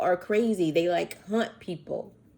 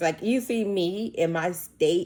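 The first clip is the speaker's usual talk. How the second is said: plain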